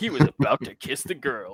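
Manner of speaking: storytime narrator voice. Comparing the scene to that story time guy: story time guy narrator voice. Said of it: "it's like that story time guy".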